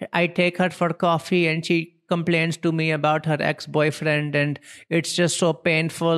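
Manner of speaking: put-on Indian accent. Quoting a man he noticed in India, in a put-on Indian accent. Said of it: "I'm sorry for doing that accent".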